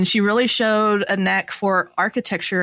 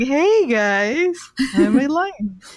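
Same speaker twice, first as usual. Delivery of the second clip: very slow, high, drawn-out lion voice; 6 semitones higher than usual. Joking about a badly made stuffed lion, voicing a lion. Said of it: "And the lion just going".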